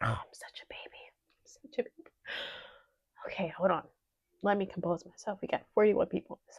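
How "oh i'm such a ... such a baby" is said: soft, overwhelmed whisper through happy tears. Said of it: "I'm not crying because I'm sad".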